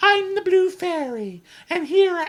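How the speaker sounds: very high-pitched unicorn voice. Mocking a film scene as the Blue Fairy: Blue Fairy in unicorn voice. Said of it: "I'm doing my unicorn voice again".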